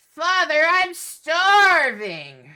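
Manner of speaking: piercing, very high, very loud inhuman scream. A game narrator voices something beneath the chapel floor, inhumane scream. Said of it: "this inhumane scream that rises from beneath".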